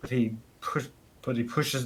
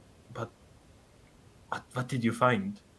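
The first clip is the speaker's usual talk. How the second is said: hushed, secretive, sneaky half-whisper; 3 dB quieter than usual. Voicing a character who comes close and asks what was found: half-whispering. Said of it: "comes close and, like, whispers".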